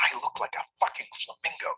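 hissed words. A woman answers the narrator's whispered joke, hissing. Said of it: "she hisses".

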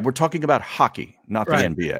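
put-on, politely needling, subtly passive-aggressive tone. Imitating Trebek telling a contestant they were wrong: imitating Trebek's passive-aggressive tone. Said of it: "a very subtle, passive-aggressive tone".

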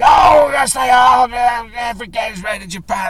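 high, loud aggressive shouting. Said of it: "very aggressively shouting".

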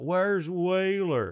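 very high, loud shouted yell. Retelling how someone shouted at another comedian's show: imitating a heckler yelling. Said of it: "Someone yelled out".

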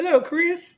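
very high, cartoonish put-on old-man voice. Comparing a friend to the old man from Family Guy: old guy from Family Guy voice. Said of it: "he's like that old guy in Family Guy".

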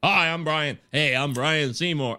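slow, beautiful radio announcer voice. Imitating a podcaster introducing himself: imitating Brian Seymour's radio voice. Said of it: "beautiful voice he has".

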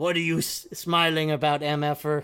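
mock rough gravelly voice. Retelling what Gato said when Rocky Ramirez smiled at the end: imitating Gato's gravelly voice. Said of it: "his gravelly voice".

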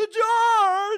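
loud, very high comic delivery, belted out. Doing a bad impression, louder: loud Jerry Seinfeld impression. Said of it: "like, louder".

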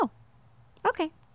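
put-on dead calm voice, soft and high. Retelling own reply when a man said it's no big deal, acting out being very calm. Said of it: "And I was very calm".

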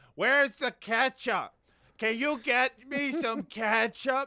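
acted, loud, high-pitched, demanding exclaim. Describing moviegoers ordering by app, the speaker quotes one: retelling a loud exclamation. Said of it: "loudly they're exclaiming like".

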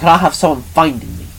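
ordinary delivery

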